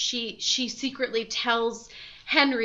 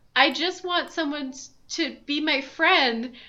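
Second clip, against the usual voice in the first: put-on weepy, sobbing, tearful crying voice; 4 semitones higher than usual. Retelling how the little pig cries in his pen: Wilbur mock crying. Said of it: "sitting in his little pig pen and crying and be saying".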